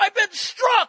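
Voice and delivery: shrill, very high, very loud shriek. Retelling how a struck man on the street screamed: imitating someone screaming. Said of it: "he screams this out".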